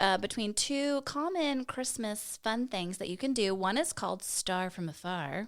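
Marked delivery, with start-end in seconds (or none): 3.5-5.5 announcer-style announcing tune. Announcing the first of two Christmas activities: announcing with special intonation. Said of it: "thank you for those different intonations as you announced them".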